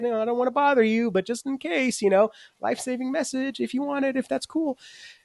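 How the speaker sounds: put-on very high, tiny, squeaky child's voice. Describing how the church has let itself be relegated, in a squeaky little kid voice. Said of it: "little squeaky voice kid".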